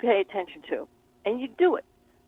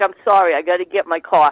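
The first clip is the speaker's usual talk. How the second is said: loud, fake put-on New York accent; 5 semitones lower, 7 dB louder than usual. Acting out someone ignoring a divine message, put-on New York accent. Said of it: "Did I do a good New York accent?".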